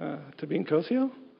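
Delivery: mock uncertain, hesitant, small, rising like a question. Retelling answering the teacher's age question after a mix-up: retelling own unsure answer. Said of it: "Not so confidently".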